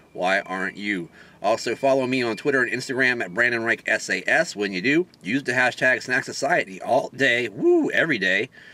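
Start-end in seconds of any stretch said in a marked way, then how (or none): 5.2-8.5 voice cracking and breaking on woo. Host signing off, telling viewers which hashtag to use, voice cracking. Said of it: "my voice is cracking up here".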